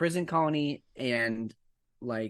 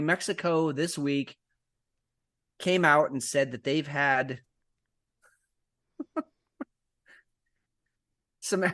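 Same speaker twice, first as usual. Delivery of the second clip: voice strained from stifling laughter; 3 semitones higher than usual. Announcing a news story, struggling not to laugh. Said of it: "I'm trying to say it with a straight face".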